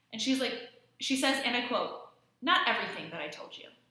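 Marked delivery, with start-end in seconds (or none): 2.4-3.6 put-on dead-level monotone delivery with no feeling. Recounting a woman's reply to detectives in an interview, imitating a flat, emotionless voice. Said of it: "With no emotion, just nothing".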